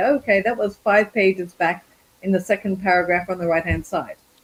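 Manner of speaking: ordinary talk, nothing marked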